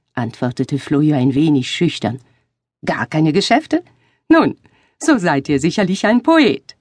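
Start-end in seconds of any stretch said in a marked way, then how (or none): 2.9-6.6 cheerful, merry, laughing, sing-song. A stranger replies to Florio, laughing merrily. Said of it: "versetzte jener lustig lachend".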